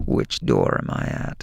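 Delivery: very low, raspy threatening voice. Acting out what a man on the call said: put-on raspy murderous voice. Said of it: "That raspy voice".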